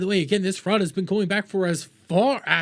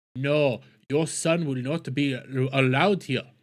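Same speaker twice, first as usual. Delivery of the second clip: clumsy, bad put-on Somali accent; 5 semitones lower than usual. Retelling a daycare's reply refusing a child, in a bad Somali accent. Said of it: "That's a bad Somalian accent".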